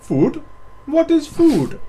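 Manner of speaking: very loud, very high, squeaky, silly put-on voice. Urging someone to do a funny voice, showing it first; funny voice. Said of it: "Do a funny voice".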